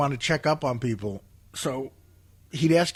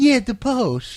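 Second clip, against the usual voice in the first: high, slow, condescending tone. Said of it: "he'd get real condescending".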